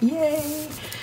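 high, excited cheer.

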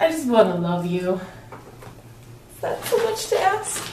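close to tears. A boy band fan speaking, tearful. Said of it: "I'm not crying".

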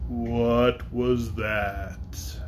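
deep, solemn, weighty, grave dragon voice. Narrator reads the farthest dragon's question, in a deep, grave voice. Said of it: "in a deep, grave voice".

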